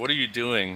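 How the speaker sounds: put-on tearful, crying voice. Retelling an old fan's question at a game: imitating someone crying. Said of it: "This old guy started crying".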